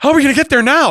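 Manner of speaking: very high, flustered, frantic panicked cry. Imitating a GPS voice right after a missed turn: mock panicking. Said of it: "stop panicking".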